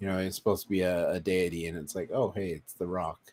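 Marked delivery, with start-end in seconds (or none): 2.1-3.2 flat put-on voice with no inflection. Mocking a movie star voicing a deity: flat The Rock impression, no inflection. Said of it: "The Rock play The Rock".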